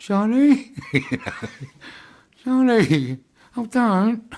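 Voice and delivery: very high, very slow, drawn-out South London gangster voice. Retelling calling out at a window while others listen, South London gangster voice. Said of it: "in my best South London gangster voice".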